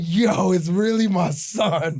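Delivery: beaming, joyful tone. Retelling holding the newborn son for the first time: imitating own grinning excitement. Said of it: "I'm holding you and I'm cheesing".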